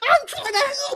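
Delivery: very high-pitched yell. Retelling a movie scene, the speaker mocks Superman: imitating Superman's high-pitched yelling. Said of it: "his voice gets all high pitched and he's yelling".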